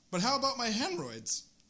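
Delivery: voice cracking and breaking mid-line. Rehearsing the same line again and again: voice cracking. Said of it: "my voice cracked".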